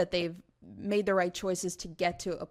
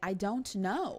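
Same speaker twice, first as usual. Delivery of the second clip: put-on little boy voice; 2 semitones higher than usual. Imitating how the boy now says it: imitating a child saying "I don't know". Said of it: "Just like that".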